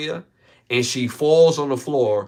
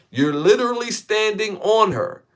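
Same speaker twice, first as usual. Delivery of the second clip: mock kid's voice, high-pitched accusing yell; 9 semitones higher than usual. Retelling what a kid yelled at a man: imitating a kid yelling. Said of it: "This is what he yells".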